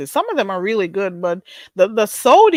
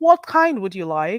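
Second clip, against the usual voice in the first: amateur attempt at a British accent. Serving tea to a guest, in an attempted British accent. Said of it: "I should probably try the British accent again".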